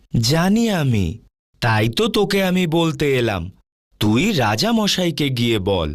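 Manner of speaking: plain reading voice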